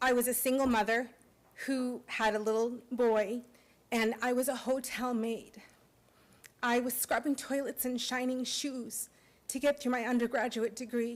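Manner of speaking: emotional, choked up, voice catching. A speaker thanking the university recalls her start there, choking up. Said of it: "I'm getting emotional, sorry".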